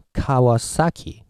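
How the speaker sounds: Kawasaki, English stress, strong accent on each syllable.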